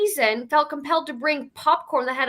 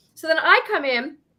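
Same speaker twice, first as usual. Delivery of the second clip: ordinary delivery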